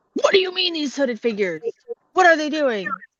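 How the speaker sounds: high, loud, yelled voice. In a tabletop game, a player uses a turn to yell at another character: yelling at someone. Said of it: "yelling at you're yell".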